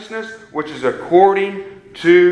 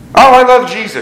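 loud, taunting, mocking gush; 4 semitones higher, 7 dB louder than usual. The speaker quotes neighborhood teenagers who say it mockingly: imitating a mocking tone. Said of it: "They say that mockingly".

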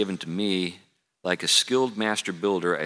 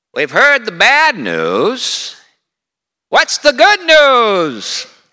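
put-on very high, very loud, swooping old-man sing-song drawl; 13 dB louder than usual. Retelling what a man predictably said to the preacher during sermons, imitating how he talked. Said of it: "he talked like that".

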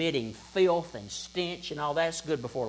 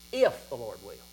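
if strongly stressed, hit hard; 5 semitones lower than usual. Repeating the leper's words to Jesus, strong stress on if. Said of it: "If, big emphasis, capital letters".

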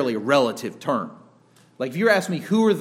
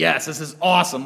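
put-on easy, worry-free satisfaction, carefree and boastful. Acting out the rich fool from the parable: imitating a carefree rich fool. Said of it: "there's no anxiety in that guy's voice".

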